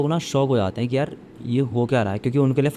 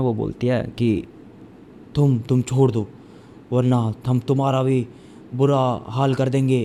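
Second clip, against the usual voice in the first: put-on halting, stammering delivery, stumbling over words. Retelling a scene where an actress threatens someone, imitating halting, stammering speech. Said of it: "अटक अटक के बोल रही होती है".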